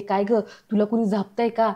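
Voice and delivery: ordinary talk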